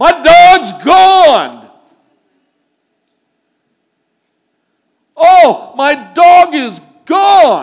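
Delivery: very high, very loud, swooping yell. Telling how he called for his missing dog from the front porch, retelling his own yell. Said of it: "and I yelled".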